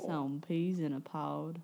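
put-on southern drawl. Joking about a new name, saying it in a put-on southern drawl. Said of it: "you have to say it with a really, with a southern drawl".

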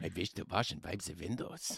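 put-on Russian accent. Telling a scary story, voicing the man at the window: put-on russian accent. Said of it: "Is he Russian?".

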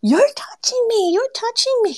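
mock, shrill yelling, pitched way up high. Recounting how a woman reacted after you touched her and asked for calm, imitating a woman yelling. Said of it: "she starts yelling".

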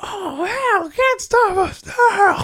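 high, slow, screamed shout.

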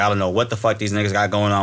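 ordinary delivery

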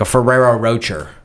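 ferrero rocher said with anglicized British pronunciation. Showing how a British person would say the name, British pronunciation. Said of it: "a British person would be like".

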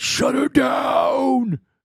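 put-on very high, rough, shrill rasping barked shout. Imitating what the bosses were saying: imitating a boss shouting. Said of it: "You can guarantee they were saying that".

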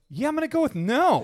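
very high-pitched, sarcastic, dismissive tone. Retelling own reply to a woman's proposition, acting out own sarcastic reply. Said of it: "when the sarcasm kicks in".

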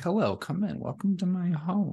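high-pitched, spooky, comforting host voice. Describing how the hosting voice should feel, the speaker demos a spooky Mr. Rogers voice. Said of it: "my voice conveys a spooky Mr. Rogers situation where it's like, it's comforting".

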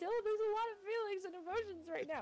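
acted-out teary, very high-pitched sobbing voice. Retelling a morning phone call to Dylan: retelling own sobbing. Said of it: "And I was, like, sobbing".

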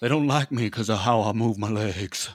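mock, cheesy, over-the-top rock star voice.

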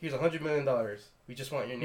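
ordinary delivery

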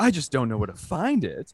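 put-on loud old man voice. Retelling a customer at the movie theater asking for his card: imitating a loud old man.

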